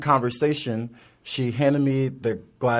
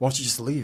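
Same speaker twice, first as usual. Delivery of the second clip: soft, hushed stage whisper; 6 dB quieter than usual. Retelling what a stranger kept saying to himself: imitating half-whispering to himself. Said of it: "this guy is starting to whisper".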